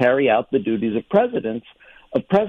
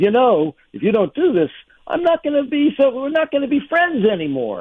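menacing mobster voice, pitched high; 11 semitones higher than usual. Quoting Trump threatening Pence: imitating Trump talking like a mob boss. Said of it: "He really talks like a mob boss".

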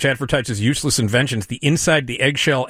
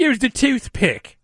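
put-on British accent, much higher; 11 semitones higher than usual. Act out the girlfriend scolding a guy who picked up a sample, in a put-on British accent. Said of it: "his girlfriend does a British accent and goes".

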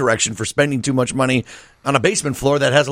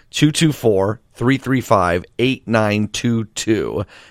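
slow, unhurried pace; 3 semitones lower than usual. Radio host, out of time, repeats a phone number for listeners, said slowly. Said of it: "I'm going to say that again slowly".

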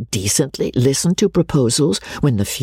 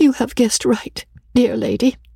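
sweet, faltering voice, much higher pitched; 10 semitones higher than usual. Narrator reading a character's reply to another's question: sweet, faltering voice. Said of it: "with a sweet, faltering voice".

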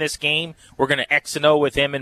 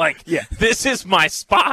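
plain

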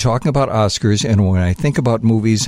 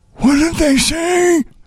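put-on old man voice, much higher. Recording lines that Karen asked for, in an old man voice. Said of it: "I'm going to do a couple old man voice things".

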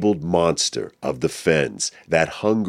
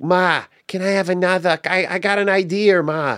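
put-on thick Massachusetts accent, very high-pitched. Recalling growing up in Massachusetts, in a Massachusetts accent. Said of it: "we had this Massachusetts accent. It was like".

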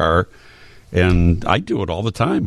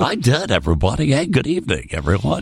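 put-on higher, old-school radio DJ patter; 5 semitones higher than usual. Host recalls hearing himself back when he was the evening dj, in his old evening dj voice. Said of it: "I actually did sound like this".

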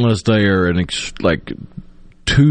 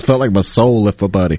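usual speaking voice

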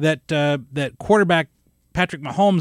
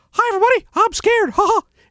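loud squeaking voice, pitched high; 5 dB louder than usual. With two daughters before the big drop, speaking in a Mickey Mouse voice. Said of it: "And I said it like Mickey Mouse".

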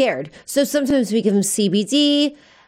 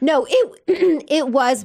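breaking, cracked voice, cracking mid-phrase; 3 semitones higher than usual. Asked whether it was really CBD, answering unsure with voice cracking. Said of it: "My voice cracked".

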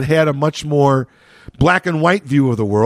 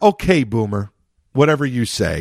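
offhand, dismissive, brushing-off tone; 5 semitones lower than usual. Explaining the tone of a millennial phrase, said dismissively. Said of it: "That's kind of the tone".

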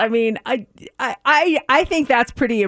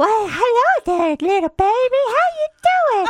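silly, cutesy, put-on baby-talk voice, much higher; 12 semitones higher than usual. Showing how the speaker greets a baby in one of their voices, silly voice for babies. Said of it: "I talk to them in one of these voices".

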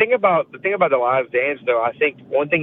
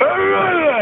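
put-on fired-up voice, cracking, pitched higher; 3 dB louder than usual. Describing a fired-up sports figure: imitating Michael Irvin's cracking voice. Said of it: "his voice just starts cracking".

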